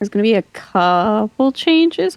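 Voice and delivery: voice cracks partway through. Misty, asked if she has anything to add: voice crack. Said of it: "I had a voice crack".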